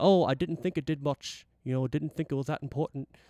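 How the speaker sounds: put-on British accent. Retelling a roadie answering a musician about missing gear, in a british accent. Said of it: "I'm trying to do my British accent".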